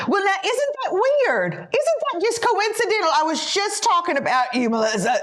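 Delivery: motherly voice, way up high. Retelling what mother said at the table: imitating mother's voice. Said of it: "She's talking like this".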